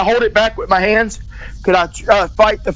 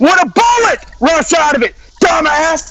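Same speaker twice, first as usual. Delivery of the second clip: loud, high-pitched, angry yelling shout; 7 semitones higher, 3 dB louder than usual. Repeating a yes or no question to another speaker: shouting. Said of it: "You were shouting".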